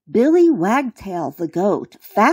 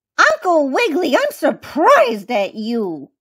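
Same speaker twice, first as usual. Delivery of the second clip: little, squeaky, pitched-up mouse voice; 5 semitones higher than usual. A mouse speaks to the bunny after he tickled a goat; squeaking. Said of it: "squeaked the mouse".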